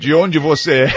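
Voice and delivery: low voice.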